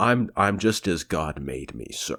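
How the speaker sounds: acted, mock-offended man's voice. Retelling a film scene where an insulted hotel manager replies: imitating an offended man. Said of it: "a real guy being offended".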